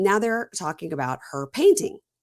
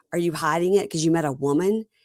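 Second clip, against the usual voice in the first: plain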